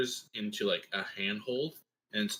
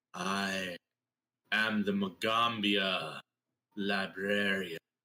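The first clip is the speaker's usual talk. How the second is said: voice seeming to come from everywhere at once. Voicing a librarian creature whose jaw opens without sound: voice almost omnipresent. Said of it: "a voice almost omnipresent".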